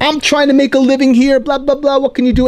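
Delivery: high-pitched, frantic, out-of-control angry rant. Retelling the rival mime's outburst: imitating someone losing it. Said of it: "And he loses his mind".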